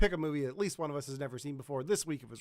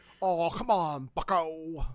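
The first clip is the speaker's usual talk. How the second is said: very slow, deliberate put-on voice, every word drawn out; 4 dB louder than usual. Calling someone Bucko for fun in a Tim Curry impression. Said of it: "that's my Tim Curry impression".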